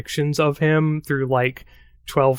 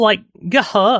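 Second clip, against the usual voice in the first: put-on Valley Girl accent, higher; 7 semitones higher, 3 dB louder than usual. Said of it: "she just did a Valley Girl voice".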